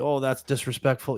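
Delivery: ordinary talk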